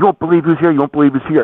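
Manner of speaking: play-acted eager voice, excited, fast and high. Retelling a worker telling other employees: imitating an excited fan. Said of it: "So he's all excited".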